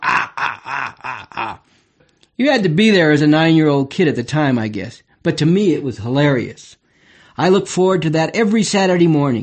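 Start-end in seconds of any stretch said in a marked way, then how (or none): 0.0-1.6 soft, fading, impish gremlin cackle. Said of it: "And he'd go".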